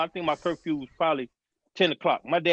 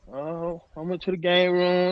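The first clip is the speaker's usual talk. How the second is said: put-on small, frightened voice. Retelling answering a father's question about the day: imitating own little scared voice. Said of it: "I got the little scary voice now".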